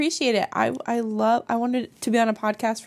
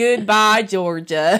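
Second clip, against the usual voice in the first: southern accent, pitched up; 3 semitones lower, 6 dB louder than usual. Saying goodbye again after being asked for a different voice: southern accent. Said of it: "Do it in your southern".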